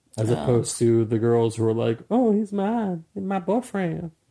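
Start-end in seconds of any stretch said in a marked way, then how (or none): 2.0-4.1 lovestruck, girlish, put-on Southern accent, pitched up. Imitating girls who wanted to see kissing, in a southern accent. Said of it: "We do not live in the South".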